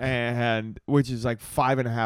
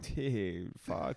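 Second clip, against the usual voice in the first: put-on breathy, whispered, dazed stoned voice; 3 semitones lower, 11 dB quieter than usual. Retelling how a friend talks when high: imitating a high friend. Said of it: "reverts back to, like, his natural".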